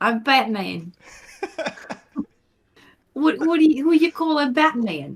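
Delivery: New Jersey accent. Joking that Gotham is in New Jersey, doing Batman with a New Jersey accent. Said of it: "Batman would have a New Jersey like accent".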